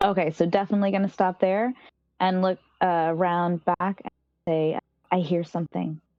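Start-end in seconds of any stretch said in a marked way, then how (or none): 5.1-6.0 speaking very hushed. Player's character stops at a corner after hearing footsteps, in a very hushed voice. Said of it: "in a very hushed voice".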